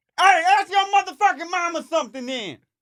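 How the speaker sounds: put-on very high yelling. On the podcast, acting out the kind of yell he loves: mock yelling. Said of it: "anytime you hear somebody yell like that".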